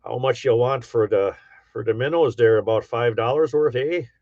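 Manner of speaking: Upper Peninsula Michigan accent. Saying they blend in up in the U P, the speaker demonstrates: Yooper accent. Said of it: "I blend in quite well when I go up to the U P".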